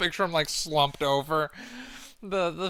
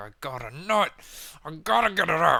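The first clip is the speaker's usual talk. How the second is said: play-acted pent-up, pushy, aggressive frustration. Voicing a man in a clip who grows aggressive with women: imitating someone's frustration. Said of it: "you can sense the frustration".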